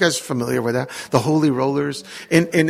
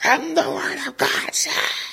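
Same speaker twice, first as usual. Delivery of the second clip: put-on very high, drawn-out preaching with rough edge; 11 semitones higher, 3 dB quieter than usual. Retelling how a father preached to a small group: imitating loud preaching to thousands. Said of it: "Dad would preach as if he were, there were thousands".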